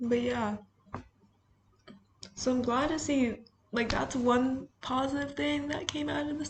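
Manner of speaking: high, teary, choked-up voice.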